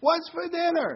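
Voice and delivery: high, loud, drawn-out yell.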